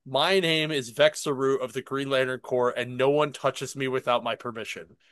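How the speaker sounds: ordinary talk, nothing marked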